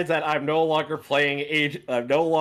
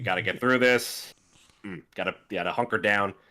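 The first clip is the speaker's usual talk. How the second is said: very low, reserved, restrained voice; 7 semitones lower, 4 dB quieter than usual. Showing the voice given to the character Adrian: deeper, reserved Adrian voice. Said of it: "a little bit more reserved, a little more deeper. ... Now that's the voice".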